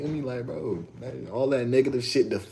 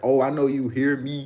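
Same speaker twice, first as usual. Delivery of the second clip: full-on loud hollering, genuinely felt; 2 semitones higher, 5 dB louder than usual. Retelling how the man's yelling got louder: imitating someone yelling. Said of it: "he started yelling for real".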